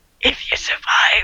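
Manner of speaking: breathy whisper under the breath. Voicing a potion maker's aside after offering gold: Klaus whispering. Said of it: "you whisper".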